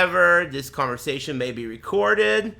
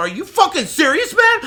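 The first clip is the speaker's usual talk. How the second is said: very high, loud, yelling outburst; 7 dB louder than usual. Retelling a phone argument with a suspected scammer: imitating a raised voice. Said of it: "So I raised my voice".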